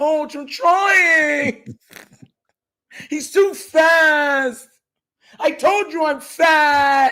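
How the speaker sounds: small shrunken voice with the word fat stretched out. Imagining how Falele sounds pleading with the coach, doing Falele's little voice. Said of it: "that whole little voice".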